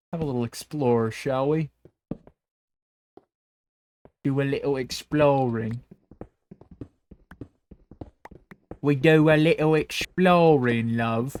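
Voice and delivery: awful put-on Cockney accent. Exploring a dark area in a game, shitty put-on cockney accent. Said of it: "shitty Cockney accent".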